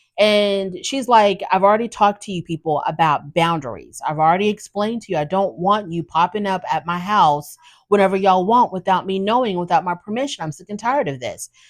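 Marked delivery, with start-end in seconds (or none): none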